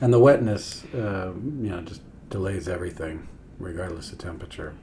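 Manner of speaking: low, slightly resigned tone. In conversation with another person, a little resigned. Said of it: "there's a little resignation in my voice".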